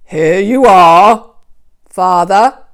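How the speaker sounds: put-on rough gruff voice, very loud and slow. Narrator reading Jacob's line as he serves his blind father, gruff voice. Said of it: "in as gruff a voice as he could muster".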